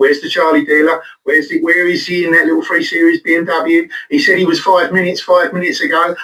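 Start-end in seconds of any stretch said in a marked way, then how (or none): none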